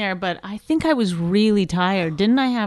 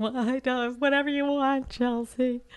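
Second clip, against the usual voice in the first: put-on crying voice, much higher; 2 semitones higher, 7 dB quieter than usual. Retelling his reply to a woman at the Improv, put-on crying voice. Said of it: "Quit doing that crying voice like that".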